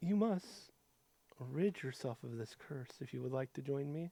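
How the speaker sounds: very quiet, soft, tender, loving woman's voice. Voicing a woman's voice from a book, speaking lovingly. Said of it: "As woman speaks to you lovingly".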